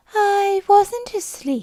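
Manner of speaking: weak, hoarse, feeble croak, very high and loud. Reading a story aloud, a sleepy character denying being asleep: hoarse, feeble voice. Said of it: "he said in a hoarse, feeble voice".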